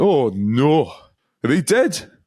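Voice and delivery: put-on drunk Geordie accent. Retelling what a drunk onlooker asked a police officer: imitating a drunk Geordie accent. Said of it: "And the guy went".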